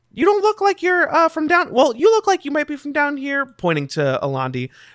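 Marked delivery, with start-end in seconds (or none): 0.2-3.5 high-pitched goblin voice. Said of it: "the goblin kind of steps forward and looks at you, and he says".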